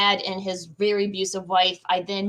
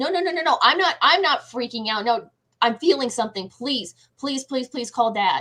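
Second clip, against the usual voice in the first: acted panicked, frantic voice, higher; 4 semitones higher than usual. Retelling begging mom to call dad when something felt wrong, retelling a panicked plea. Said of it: "She thought I was having a panic attack".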